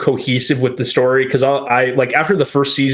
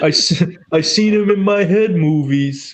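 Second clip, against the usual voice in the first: high, very slow, drawn-out New York twang; 5 semitones higher than usual. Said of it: "simple Jack slash weird New York accent blend that you just threw out".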